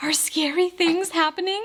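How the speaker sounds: mock scared, high voice. Retelling a partner's words after he woke from a dream, imitating a scared voice. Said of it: "he's legitimately really, really scared".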